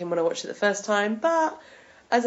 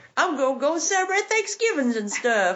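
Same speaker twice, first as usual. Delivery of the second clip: laid-on-thick, exaggerated country accent, pitched up; 7 semitones higher than usual. Teasing a co-host who sounded country, repeating the phrase in a country accent. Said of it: "You sounded you sounded so country".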